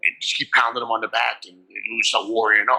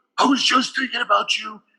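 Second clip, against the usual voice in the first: tense put-on wrestler voice, higher; 12 semitones higher than usual. Retelling what Ultimate Warrior said in his dressing room: tense Ultimate Warrior impression. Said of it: "that's how he talked, tense like that".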